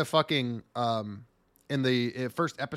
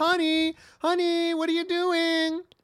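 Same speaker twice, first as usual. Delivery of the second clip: sweet, very high-pitched housewifey voice; 3 dB louder than usual. Describing a character doing dishes in an apron: imitating a housewife. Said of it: "dressed in the apron doing the dishes like a fucking housewife".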